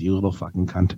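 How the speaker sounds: muttered under breath. Speaker retells what he said to a kid's back, muttered under breath. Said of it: "I called that kid to his back under my breath".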